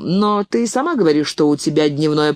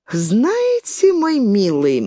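teasing, mocking, drawn-out drawl; 5 semitones higher than usual. The horsewoman, curtly rebuffed by a man, answers him in a mocking drawl. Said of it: "насмешливо протянула она".

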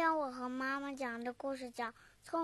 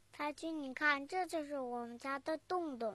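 ordinary delivery, nothing marked

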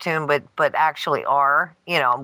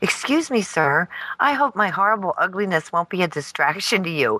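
put-on polite child voice, slower; 2 semitones higher than usual. Retelling what Joey said to an old man: imitating Joey being polite. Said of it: "was nice and polite".

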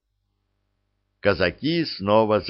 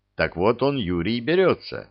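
ordinary delivery

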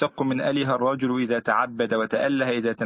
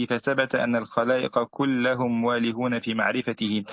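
normal talking voice

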